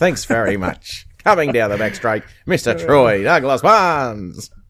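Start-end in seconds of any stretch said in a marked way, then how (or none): 1.2-4.5 fast horse-race commentator calling style. Podcast host introduces his co-host, in a racing announcer voice. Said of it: "that's my racing announcer's voice".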